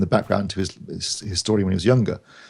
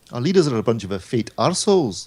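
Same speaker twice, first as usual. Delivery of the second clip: very bad, put-on Scottish brogue; 3 semitones higher than usual. After thanking Mark Botwright and Steve Withers, the speaker quips in a terrible Scots accent. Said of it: "That is the worst Scots accent I have ever heard".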